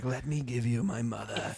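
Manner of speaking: slow, eerie, unsettling, creepy put-on voice. Showing how the speaker usually says this line, in a creepy voice. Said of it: "I say it like that with, like, a creepy voice".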